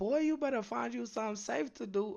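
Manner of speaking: shrill, very high, mad auntie-style scolding yell. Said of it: "he sound like somebody mad ass auntie [name] yelling".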